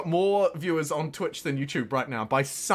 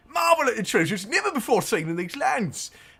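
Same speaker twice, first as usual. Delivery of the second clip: bad put-on English accent, pitched up; 6 semitones higher than usual. Voicing a character's lines, a New Zealander does a bad English accent. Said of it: "a New Zealander doing a bad English accent".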